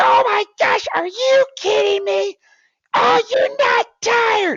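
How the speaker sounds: very high, very loud, drawn-out screaming. Recalling how a man yelled on the sideline, imitating his high-pitched screaming. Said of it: "His voice would always get really high pitched".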